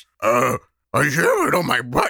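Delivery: cartoon dog voice with pitch swooping up and down. During an improv bit, answering the other character's question, Scooby-Doo voice. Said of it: "I'll do the Scooby voice".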